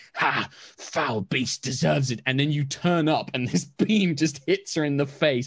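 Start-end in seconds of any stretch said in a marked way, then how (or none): 0.2-2.2 put-on, slow laughing big-brute monster voice. Describing a game, voicing the big enemy when you headbutt the dog, mock laugh.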